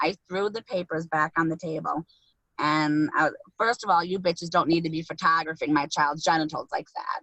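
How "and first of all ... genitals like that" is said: plain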